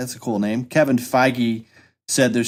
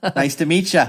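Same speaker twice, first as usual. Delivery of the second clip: put-on folksy Midwestern accent, higher; 5 semitones higher than usual. Joking about a squeaky-clean name, Fargo character voice. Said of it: "Like a character out of Fargo".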